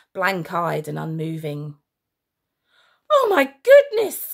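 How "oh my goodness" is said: very high, very loud, shrill screaming cry. Reading a line as the grown-ups run from the fair, screamed. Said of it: "screamed Mr".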